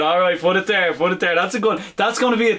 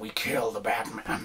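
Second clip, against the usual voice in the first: very low, deep, hushed, quiet villain voice; 8 semitones lower, 13 dB quieter than usual. Quoting a villain line, Heath Ledger Joker impression. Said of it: "It's got to be Heath Ledger's".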